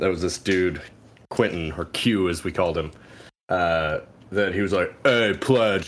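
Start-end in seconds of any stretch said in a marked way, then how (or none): 5.0-5.9 put-on, laughing fraternity-brother voice. Retelling a fraternity brother asking a pledge for ranch: impression of Q. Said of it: "this is a perfect, perfect impression of him".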